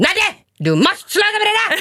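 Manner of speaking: mock very high-pitched, shrill shouting. Opening the studio door, the speaker retells the producer yelling at her: retelling Malin Enqvist's shout. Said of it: "skrek vår producent Malin Enqvist, skrek".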